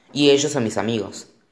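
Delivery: plain reading voice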